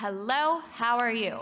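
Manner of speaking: natural, flowing, everyday speech-like phrasing. Leading a group vocal exercise, saying a phrase more speech-like. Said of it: "make it sound a little bit more speech-like".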